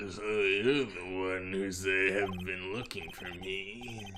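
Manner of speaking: gross character voice. Improvising a character greeting the person who sought him, in a gross voice. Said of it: "be a gross, gross voice".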